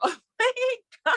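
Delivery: excited, thrilled exclamation.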